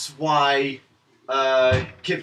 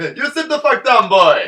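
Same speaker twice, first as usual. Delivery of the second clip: put-on loud, pitched-up Jamaican accent, belted out; 8 semitones higher, 6 dB louder than usual. Speaker reacting to learning a Jedi's accent: mock Jamaican Kit Fisto voice. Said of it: "Kit Fisto talks with a Jamaican accent".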